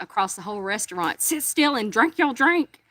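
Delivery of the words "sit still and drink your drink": put-on loud, high, top-of-lungs bellowing yell. Retelling a crowded restaurant scene, a dad's loud shout: imitating a dad yelling. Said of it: "the dad just yelled as, at the top of his lungs".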